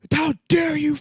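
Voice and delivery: put-on shrill, very high, drawn-out outraged scream. Retelling a news show guest being yelled at: imitating someone screaming. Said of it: "screaming at the guy".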